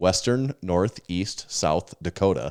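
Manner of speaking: each word evenly spaced with equal emphasis. Saying the phrase the intended way: even pauses between each word. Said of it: "important to say it that way with equal spaces between each".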